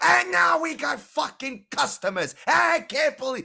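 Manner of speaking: enraged, very high, shrill, spitting shouting. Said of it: "spittle flying out of his mouth".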